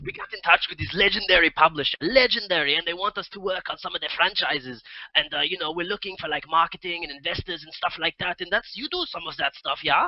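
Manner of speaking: bad fake Danish accent. Recounting what a company told him, in his terrible Danish accent. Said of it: "I'm gonna do my Denmark accent now".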